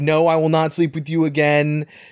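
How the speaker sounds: normal talking voice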